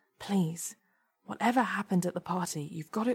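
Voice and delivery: whispering. Anthony speaks to Debbie while waiting for the lift, whispered. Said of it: "Anthony whispered to Debbie".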